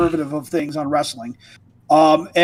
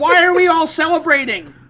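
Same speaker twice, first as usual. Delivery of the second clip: yell, very high and drawn out; 10 semitones higher than usual. Retelling watching a wrestling match at fourteen: imitating own yelling at TV. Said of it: "I'm yelling at the T V".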